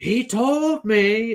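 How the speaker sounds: very high, loud, unhinged yelling. Describing a scene from the books, imitating Lanfear yelling. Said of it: "yelling on top of something".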